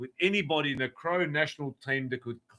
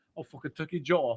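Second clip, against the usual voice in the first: terrible, fake put-on Scottish accent. In a rowdy back-and-forth with another speaker, a terrible scottish accent. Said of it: "That's a terrible accent".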